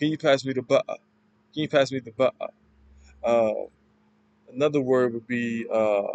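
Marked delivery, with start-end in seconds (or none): 0.0-2.5 quick put-on accent, T dropped in butter. Teaching an accent's features, showing the T sound, accent dropping the T sound. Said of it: "Instead of butter, it'd be butter".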